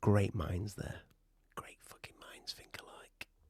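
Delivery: hushed, breathy whisper under the breath. Reacting while they try something out together, whispering. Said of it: "I don't know why I'm whispering".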